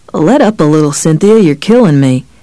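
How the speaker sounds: plain reading voice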